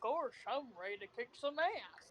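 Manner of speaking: hushed, murmured, dopey cartoon-dog voice. Imagining what Goofy would say, Goofy voice. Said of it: "imagining Goofy going like".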